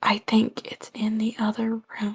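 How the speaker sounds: faintest, very quiet, barely-there whisper. Player describing what their character will whisper to whoever can hear, whispering as quietly as possible. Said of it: "try to whisper as quietly as possible".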